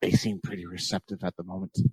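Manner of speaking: whispering. Leaning in to the Lord during a gathering, speaking in character: whispering. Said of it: "I kinda whisper to the Lord".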